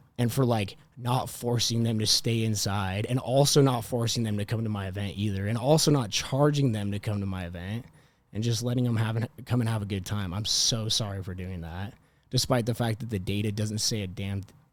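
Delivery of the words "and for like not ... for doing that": usual speaking voice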